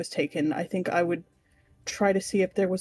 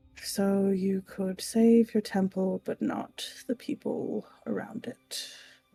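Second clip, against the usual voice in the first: quietly muttering under breath. Player in a role-playing game, looking around an untouched temple, muttering under breath. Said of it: "just kind of like under my breath".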